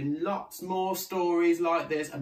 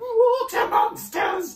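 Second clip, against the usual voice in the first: very high-pitched, loud, yelping outcry; 7 dB louder than usual. One of the young ones looks down into the water, crying out. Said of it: "one cried".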